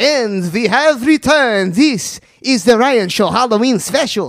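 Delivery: Transylvanian-accented speech. Opening the Ryan Show's Halloween special after returning, the host does a put-on Transylvania accent. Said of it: "that's the best Transylvania accent I got".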